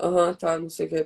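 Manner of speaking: low, grave voice. Speaker shows what her personal speaking voice is like: deeper voice. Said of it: "ela é mais grave".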